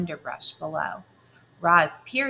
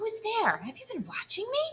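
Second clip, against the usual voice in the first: very high, swooping, hissing creature voice; 4 dB quieter than usual. Narrator reading a hidden creature answering a robot, hissing creature voice. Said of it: "The creature's voice hissed up from the shadows".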